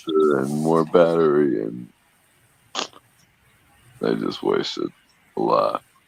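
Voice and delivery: low, halting, let-down, broken-up phrasing. Asked whether it was a wheel you were interested in, disappointed. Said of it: "You sound so disappointed".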